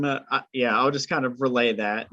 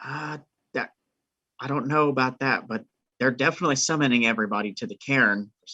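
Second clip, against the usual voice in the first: hushed, confiding half-whisper; 3 dB quieter than usual. Leaning in to answer the group in character: half-whispering. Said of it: "I'm gonna lean in and whisper".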